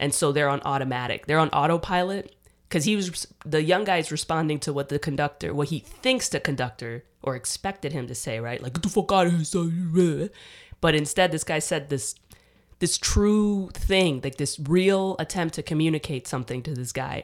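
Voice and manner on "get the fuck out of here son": put-on tough, dismissive New York accent, drawn-out "son". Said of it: "that whole New York".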